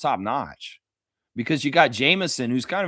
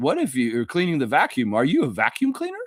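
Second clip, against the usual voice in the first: put-on goofy, dorky, nerdy college-kid voice, swooping pitch. Retelling a clip of Jacoby: imitating a goofy nerdy college kid. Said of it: "goofy, nerdy".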